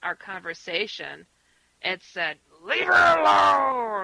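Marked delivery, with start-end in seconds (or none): 2.6-4.0 very loud, growling yell with "alone" dragged out. Retelling a phone call interrupted by an unearthly voice: imitating a growly scream. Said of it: "a horrific, growly-like voice interrupted".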